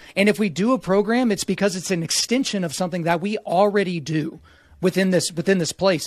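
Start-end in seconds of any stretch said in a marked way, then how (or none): none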